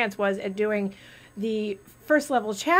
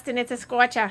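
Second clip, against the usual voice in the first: put-on Boston accent; 3 semitones higher than usual. Repeating a saying about the heat as they say it in Boston: Boston accent. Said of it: "You like my accent?".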